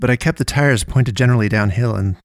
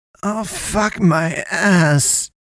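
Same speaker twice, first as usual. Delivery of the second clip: high-pitched mumble, words run together; 8 semitones higher than usual. Seatbelted in beside the narrator after the airbag went off, she mumbled. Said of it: "she mumbled".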